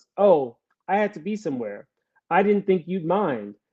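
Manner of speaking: ordinary delivery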